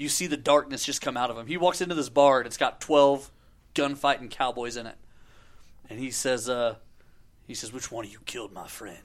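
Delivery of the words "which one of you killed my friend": very quiet, hushed, barely raised voice. Retelling a movie scene in a bar full of cowboys: Clint Eastwood impression. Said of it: "best impersonation you've ever done".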